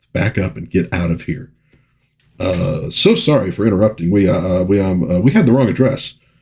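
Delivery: ordinary delivery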